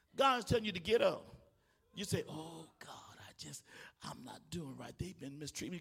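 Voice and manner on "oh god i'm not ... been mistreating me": put-on pitiful voice, lower and quieter. Mocking how someone complains to God, the speaker uses a mock-pitiful voice. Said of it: "why you make yourself sound so pitiful".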